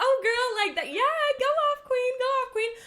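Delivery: very high, screechy, hyped-up excited voice. Showing how they talk to their besties, in a screechy voice. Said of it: "my screechy voice cracks".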